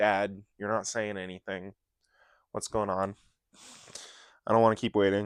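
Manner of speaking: ordinary talk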